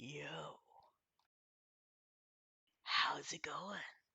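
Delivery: timbrous, deep, soft, very mellow tree voice. The narrator voices an approaching tree's greeting: deep, mellow tree voice. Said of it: "deep, timbrous, but very mellow voice say".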